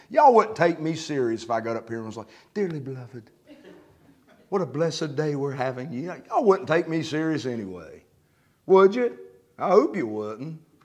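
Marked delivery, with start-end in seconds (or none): 2.5-5.9 put-on soft, sweet, gentle preacher voice. Addressing the audience, showing how he'd sound being sweet, in a mock sweet tone. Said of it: "be sweet".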